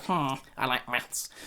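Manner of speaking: slow, drawn-out, boring, dull teacher voice. Mocking a teacher who only cares about maths, imitating a dull teacher. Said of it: "that was a good impression".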